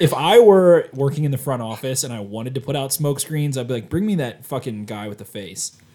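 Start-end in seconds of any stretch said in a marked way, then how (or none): none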